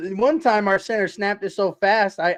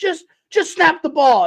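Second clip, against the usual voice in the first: put-on angry arguing voice, higher and louder; 9 semitones higher, 5 dB louder than usual. Retelling a hot mic argument with Jeff Saturday: imitating Peyton Manning arguing. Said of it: "when him and Jeff Saturday were arguing".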